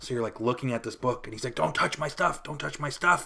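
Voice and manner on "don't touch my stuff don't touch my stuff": put-on old man voice, panicked, frantic outburst. Retelling how an old man reacted to his book being looked at: imitating an old man freaking out. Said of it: "And he freaks out".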